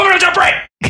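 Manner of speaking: very high, angry yelled shout. Picturing someone in a restaurant walking up to a diner, shouting. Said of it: "just shout at you".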